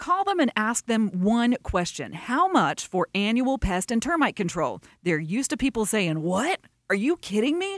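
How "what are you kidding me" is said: shocked surprise, higher. Retelling what customers say when told the price: imitating a surprised customer. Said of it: "surprised customers".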